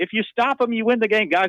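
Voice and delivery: exasperated, frustrated, very high-pitched shouting. Talking football strategy with others, the speaker is yelling. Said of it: "I know I'm yelling".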